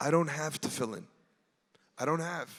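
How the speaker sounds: put-on low, soft, broken-English Russian accent. Telling a story, a man answers another man's question in a broken Russian accent. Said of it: "in a broken Russian accent".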